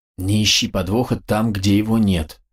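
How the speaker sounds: plain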